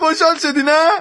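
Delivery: loud, overjoyed, tearful shout of elation.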